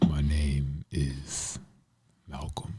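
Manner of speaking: deepest possible voice, very low and slow. Saying their name again when asked, as deep a voice as possible. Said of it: "as deep of a voice as you can".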